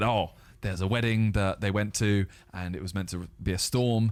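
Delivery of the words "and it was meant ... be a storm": ordinary talk, nothing marked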